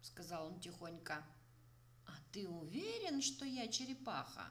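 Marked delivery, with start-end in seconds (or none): 2.0-4.5 astonished, surprised, high, swooping pitch. Narrator reads the turtle's question to the fallen elephant, surprised. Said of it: "удивленно спросил черепаха".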